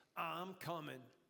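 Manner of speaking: put-on sexy New York voice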